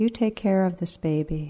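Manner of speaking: ordinary talk, nothing marked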